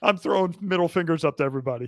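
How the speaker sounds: normal talking voice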